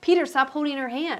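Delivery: high, mild, reined-in half-yell. Retelling what was yelled at the screen: imitating own screaming. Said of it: "I was screaming".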